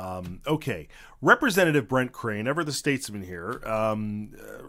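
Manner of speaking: ordinary talk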